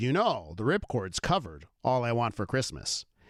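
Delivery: ordinary talk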